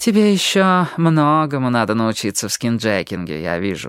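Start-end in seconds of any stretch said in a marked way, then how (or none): none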